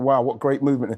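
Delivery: ordinary talk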